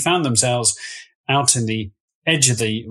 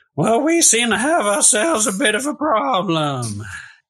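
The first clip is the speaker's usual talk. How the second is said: put-on wheezing, drawling Midwest voice; 9 semitones higher than usual. Narrator voicing a character who has just coughed, in a wheezy Midwestern drawl. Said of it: "Speaking in a wheezy Midwestern drawl".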